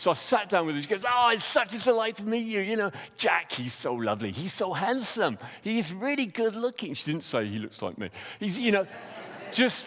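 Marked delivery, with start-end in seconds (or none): 1.1-6.9 really bad put-on American accent, high. Retelling what a woman said on meeting the speaker, in a bad American accent as Dana. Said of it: "this is a really bad impression of somebody who's American".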